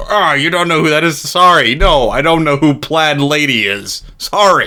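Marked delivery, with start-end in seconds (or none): none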